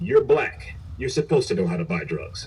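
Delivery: normal talking voice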